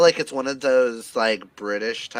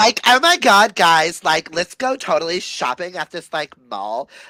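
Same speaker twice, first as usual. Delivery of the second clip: put-on, high, swooping Valley Girl voice; 6 semitones higher, 6 dB louder than usual. Showing off voices, speaker does a put-on Valley Girl voice. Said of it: "I can also do a really good Valley Girl".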